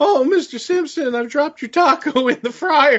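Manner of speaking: put-on high cartoon teenager voice. Recalling a surprise cameo in the ring, doing a Simpsons teenage kid impression. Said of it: "the teenage kid from The Simpsons".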